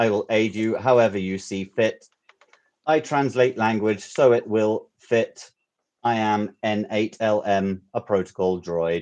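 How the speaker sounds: very slow, mechanical robot voice. Reading out lines as a protocol droid: robot voice. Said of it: "I sound like a robot dialect".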